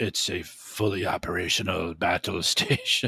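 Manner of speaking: deep, low, slow, deliberate, drawn-out voice. Slipping in a Star Wars reference mid-sentence: Emperor voice. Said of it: "That was my attempt to be the emperor".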